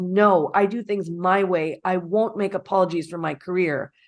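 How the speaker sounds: normal talking voice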